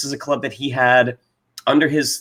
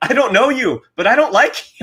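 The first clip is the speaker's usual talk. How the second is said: put-on very thick Dutch accent, pitched high; 10 semitones higher, 4 dB louder than usual. Recapping a show, speaker quotes a cast member in Jan's thick Dutch accent. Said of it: "this very thick Dutch accent".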